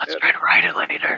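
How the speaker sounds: soft, hushed, leaning-in whisper. Leaning over to Omen in character: whispering.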